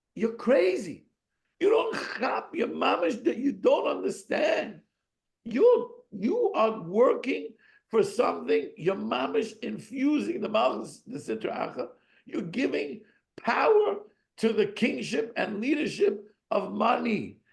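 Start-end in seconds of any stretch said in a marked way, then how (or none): 0.2-8.7 put-on screaming. Recounting what you screamed at people all Shabbos, retelling own screaming. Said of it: "I'm screaming that to people".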